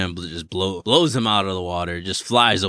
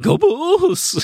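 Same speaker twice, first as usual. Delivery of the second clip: squealing cheer, pitched very high; 4 dB louder than usual. Describing a movie scene, the speaker imitates Bill Murray squealing. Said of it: "he squeals".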